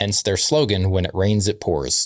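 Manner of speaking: normal talking voice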